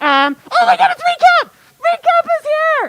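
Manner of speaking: shrill, very high, swooping, excited burst of delight. Talking to a concert audience as the recap arrives, excited outburst. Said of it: "Sorry, I got excited".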